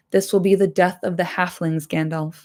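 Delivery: ordinary delivery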